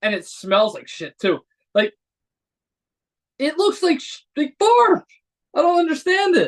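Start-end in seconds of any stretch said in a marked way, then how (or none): 3.4-6.5 pitched-up voice, cracking as it goes. Speaker complaining mid-rant while drinking a cappuccino, voice cracking. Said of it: "My voice is cracking over here".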